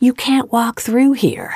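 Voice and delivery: agitated, high shouting. A guard storms over to the narrator in a lobby, waving his arms; yelling. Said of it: "waving his arms and yelling".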